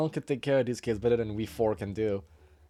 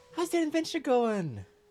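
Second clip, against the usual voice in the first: put-on excited children's voices, higher; 13 semitones higher than usual. Voicing orphaned kids greeting a returning player: voicing excited kids. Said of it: "they go like".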